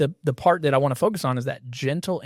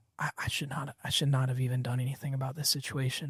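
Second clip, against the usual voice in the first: imitated soft, quiet voice, quieter; 11 dB quieter than usual. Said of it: "saying it softer and softer".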